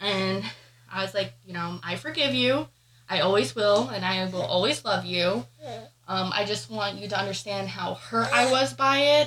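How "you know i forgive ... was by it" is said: ordinary delivery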